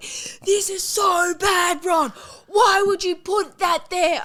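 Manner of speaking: very high, very slow, drawn-out shout. Retelling a frantic moment with a dog, imitating Lucas yelling. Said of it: "He's yelling".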